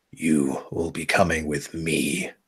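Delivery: very low, heavy growling voice. Narrating a scene, the speaker voices someone behind the listener in a heavy, low growl. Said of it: "a very heavy, low voice growls into your ear".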